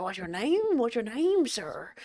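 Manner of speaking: soft, gaudy put-on Texas oil-tycoon voice. Trying out a voice for a business character, Texas tycoon voice. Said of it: "he's a bit of like a Texas tycoon".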